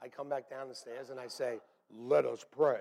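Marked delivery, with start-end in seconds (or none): 1.9-2.8 low, deep, authoritative in-charge voice. Coming back downstairs, the speaker retells taking charge of prayer: deep voice. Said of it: "in a deep voice".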